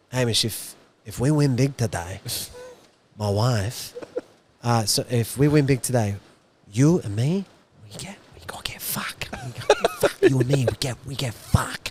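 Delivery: hushed, soft stage whisper under the breath. Retelling what a man said at the races: imitating someone whispering. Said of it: "whispered to me".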